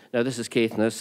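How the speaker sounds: normal talking voice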